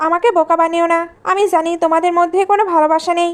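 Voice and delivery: ordinary talk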